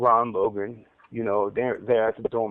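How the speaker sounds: ordinary talk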